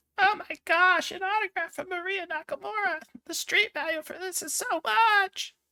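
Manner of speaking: very high, slow, gushing, starstruck fan voice. Voicing a fan who gets an autograph from a movie star: fan voice. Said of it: "I promise not to do that voice again".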